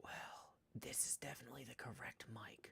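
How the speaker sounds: very quiet whisper right into the mic. A streamer testing the Twitch mic: whispering close to mic. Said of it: "I'm whispering very closely into the Twitch mic".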